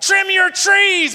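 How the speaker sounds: loud, high put-on shout. Retelling how his wife yelled back at the neighbor: retelling his wife's yell. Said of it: "She yells back".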